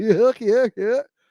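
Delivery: goofy guffaw. Explaining what they meant, the speaker imitates somebody guffawing. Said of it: "somebody guffawing, like".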